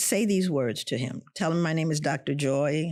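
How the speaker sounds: plain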